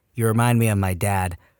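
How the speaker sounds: normal talking voice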